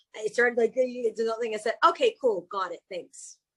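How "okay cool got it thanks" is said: put-on heavy British accent. Speaker retells answering a text about a calendar invite: very british accent. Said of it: "said it with that very British accent".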